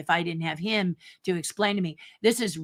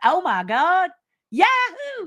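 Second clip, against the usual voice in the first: put-on very high, slow, drawn-out country drawl; 12 semitones higher, 3 dB louder than usual. Mimicking a contestant's exclamations, in a put-on country accent. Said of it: "in their country accents".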